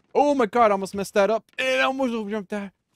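very loud, panicky, panicked cry. Playing a game after nearly messing up a jump: panicking. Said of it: "why am I panicking?".

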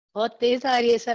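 usual speaking voice

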